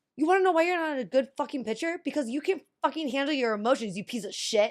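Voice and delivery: mock, high-pitched, furious ranting. Recounting going off at a Little League pitcher at thirteen; retelling going off angrily. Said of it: "I went completely off".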